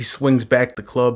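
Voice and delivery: normal talking voice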